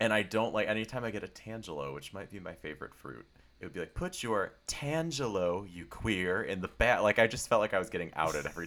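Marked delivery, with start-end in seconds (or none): 3.9-7.0 weird, edgy machine voice, loud and slow. Retelling how the self-checkout machine talks: imitating a weird edgy machine voice. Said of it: "this weird edgy way".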